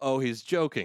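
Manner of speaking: ordinary talk, nothing marked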